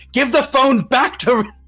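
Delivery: play-acted very high, stretched-out holler. Voicing an unseen person yelling over a phone: someone yelling on a phone. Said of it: "a person yelling for their mother".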